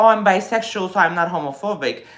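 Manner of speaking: ordinary talk, nothing marked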